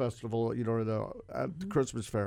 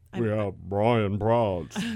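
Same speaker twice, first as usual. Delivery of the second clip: put-on booming radio announcer voice, very loud; 2 semitones lower, 9 dB louder than usual. Introducing a guest on a radio show, in a put-on radio voice. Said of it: "Why did you talk like that? That sounded weird".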